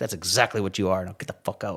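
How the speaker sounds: mock-angry, acted-out angry tone. Recounting telling off a man who insulted him, retelling angry words. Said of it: "and I'm angry, right?".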